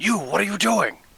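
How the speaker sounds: screaming in a put-on voice. Voicing a character as someone moves to stab him: screaming in character. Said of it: "scream out".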